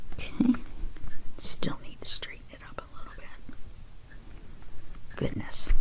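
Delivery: quiet, soft, hushed indoor-voice whisper.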